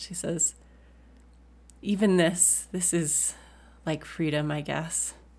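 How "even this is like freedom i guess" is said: slow, soft, private half-whisper. Narrating a character's words meant only for the listener, kind of half-whispering. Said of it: "she kind of whispers to you".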